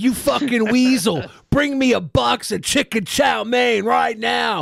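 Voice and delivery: slow, bossy, domineering, assertive put-on tone. Imitating a TV commentator barking orders off air: imitating someone talking assertively. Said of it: "he talks like hella assertive when he's not on air".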